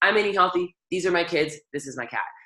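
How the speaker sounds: ordinary delivery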